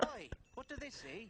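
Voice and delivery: thick, high, heavy Irish brogue throughout. An acupuncturist answering his patient in a gag, with a thick Irish brogue.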